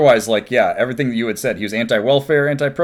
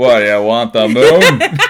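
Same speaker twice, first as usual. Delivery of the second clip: put-on cowboy drawl, louder; 2 semitones lower, 6 dB louder than usual. Doing a movie line as a cowboy star: John Wayne impression. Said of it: "when you do John Wayne and It's a Wonderful Life".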